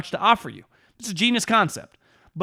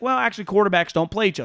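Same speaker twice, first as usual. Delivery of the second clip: put-on sarcastic voice. Retelling how Rodgers answers a question, imitating Rodgers being sarcastic. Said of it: "sarcastic remarks".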